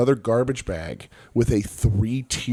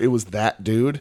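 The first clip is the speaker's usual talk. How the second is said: ordinary talk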